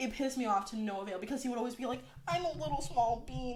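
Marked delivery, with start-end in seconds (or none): none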